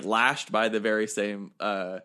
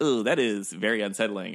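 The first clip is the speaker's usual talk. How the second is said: usual speaking voice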